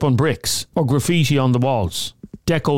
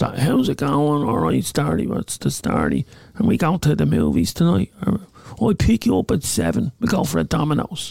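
overdone stock junkie accent. Speaker imitating an accent they couldn't date someone with, in a stereotypical junkie voice. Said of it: "this stereotypical junkie voice".

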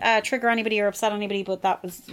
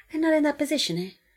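put-on Brazilian accent with raised pitch; 6 semitones higher than usual. Retelling what a friend once said: Fabio's Brazilian accent. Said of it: "the most Brazilian sounding he has ever".

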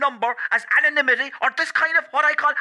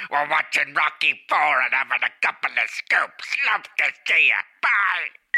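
put-on broadcaster voice, pitched lower; 11 semitones lower than usual. Leaving a message for Owen: George Hook impression. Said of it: "George Hook here".

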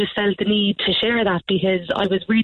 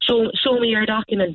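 ordinary talk, nothing marked

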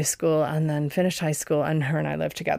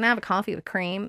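really bad put-on American accent; 4 semitones higher than usual. Speaker recalls ordering coffee at a shop, in a bad American accent. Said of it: "Sorry, that's really bad, probably American accent".

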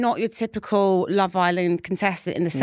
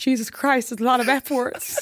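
put-on American accent, pitched up; 5 semitones higher than usual. Retelling how the speaker's dad reacted, imitating dad's american accent. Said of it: "My dad obviously got American accent".

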